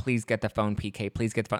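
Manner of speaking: mock teary begging voice. Retelling a moment of Dorit sitting outside, crying and calming herself: imitating Dorit crying. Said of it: "crying and she's, like".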